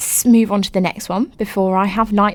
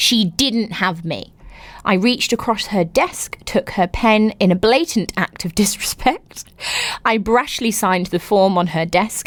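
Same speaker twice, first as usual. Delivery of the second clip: ordinary delivery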